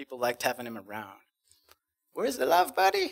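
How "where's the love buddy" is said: put-on big, jolly Mexican accent, pitched way up high. Remembering Jerry and his catchphrase: Jerry's big jolly Mexican accent. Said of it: "he would joke with this big jolly Mexican accent".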